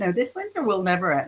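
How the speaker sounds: normal talking voice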